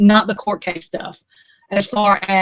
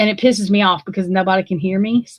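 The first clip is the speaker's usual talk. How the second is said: usual speaking voice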